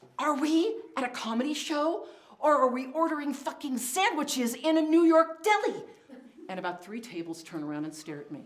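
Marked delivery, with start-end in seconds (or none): 0.2-5.9 imitated loud stage whisper, pitched higher. Retelling a remark to a friend at a comedy show: angry mom whisper. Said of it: "I turn to her and I mom whisper".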